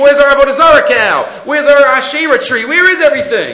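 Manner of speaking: mock all-out, loud, high-pitched screaming. Telling how everybody woke in the morning to find things gone, retelling their screaming. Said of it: "they start screaming".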